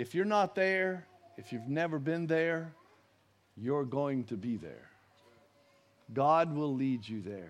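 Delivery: very tender voice. Speaking to brothers and sisters about bowing the heart to god, very tender. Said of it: "I say that very tenderly".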